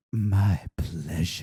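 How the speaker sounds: very low, seductive, sultry delivery. Retelling what the drive-thru worker said: imitating a very sexy voice. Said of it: "most sexiest voice ever".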